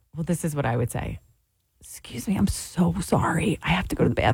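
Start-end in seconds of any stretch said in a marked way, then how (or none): 1.8-4.2 slow, breathy, whispered voice. Asked to do it again, giving the voice of somebody who has to pee. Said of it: "Can you do that again?".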